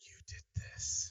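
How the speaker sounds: menacing, creeping, sinister breathy whisper. Showing another player how the threatening line should sound: more sinister delivery. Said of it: "make it a little bit more kind of sinister".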